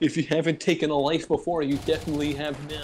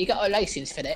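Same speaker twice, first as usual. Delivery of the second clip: put-on British accent, higher; 5 semitones higher than usual. Imitating British people while playing a game: mock British accent. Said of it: "British be like".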